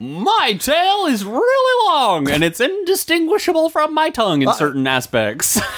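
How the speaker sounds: very high, theatrical dog voice. Playing the drama dog giving acting advice, talking like the drama dog. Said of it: "talking to me like the drama dog".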